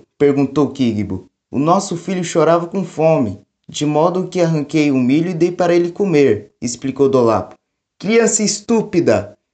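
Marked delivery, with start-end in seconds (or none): 8.0-9.3 high-pitched, shouted outburst. A father yells at his son after his wife explains; shouting. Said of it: "gritou Kigbo".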